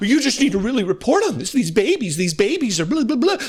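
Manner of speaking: put-on gravity and earnestness. Retelling what a woman demanded of CNN, mocking her fake solemn tone. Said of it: "she says in her fake solemn tone, in her fake, oh, earnest tone".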